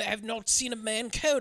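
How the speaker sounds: slow, lousy put-on British voice. Imitating an actor's character who finds symptoms baffling: terrible Hugh Grant impression. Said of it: "This is a terrible Hugh Grant performance".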